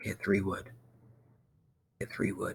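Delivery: whispered, very soft, barely audible. Testing whether the software picks up a spoken command: whispering. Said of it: "I'm whispering".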